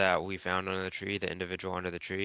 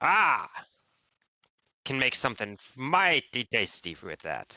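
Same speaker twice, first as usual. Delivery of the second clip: put-on dwarf voice, higher pitch; 5 semitones higher, 4 dB louder than usual. A player voicing their dwarf character in a tabletop game, dwarf character voice. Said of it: "Do I look like a dwarf who would learn? / Do I look like a dwarf who would learn?".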